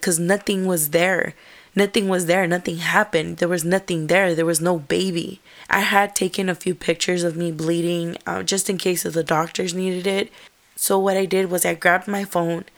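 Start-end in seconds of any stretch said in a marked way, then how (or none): none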